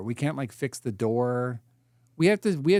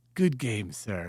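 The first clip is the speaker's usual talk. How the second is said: put-on elderly British gentleman voice, quieter; 4 semitones lower, 4 dB quieter than usual. Speaker voices the imagined voice in their head, old British man voice. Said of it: "old British man in my voice being like".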